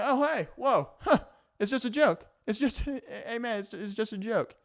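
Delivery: mock passive-aggressive joking tone. Acting out someone brushing off a complaint: imitating a passive-aggressive person joking. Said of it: "they present the problem as, like, kind of a jokingly manner".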